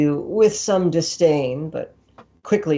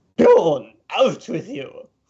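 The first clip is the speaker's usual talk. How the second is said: annoyed, dismissive, slow swooping tone. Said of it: "gives you a scowl that could scare off a bull".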